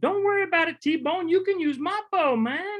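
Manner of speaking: very high-pitched, easygoing, relaxed voice. Retelling a hunting trip, quoting the companion who offers his bow: imitating Dondi's high voice. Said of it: "he's got a real high pitched voice".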